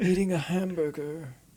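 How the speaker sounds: put-on deadpan artist voice. Quoting a film scene, imitating Andy Warhol's voice. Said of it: "get in the voice".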